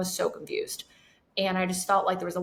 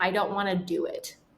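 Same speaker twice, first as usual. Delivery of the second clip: put-on crying while talking, tearful. Retelling going to mom as a child, imitating crying while talking. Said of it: "bawling my eyes out".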